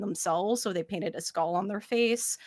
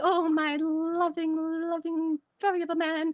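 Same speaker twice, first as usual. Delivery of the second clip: excited, cuddly, lovestruck beaver bride voice, higher; 10 semitones higher than usual. Voicing a newlywed beaver lady nuzzling her husband: excited, cuddly beaver bride. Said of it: "It's like".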